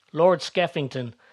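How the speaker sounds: ordinary delivery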